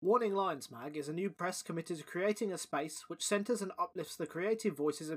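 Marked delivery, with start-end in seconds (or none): none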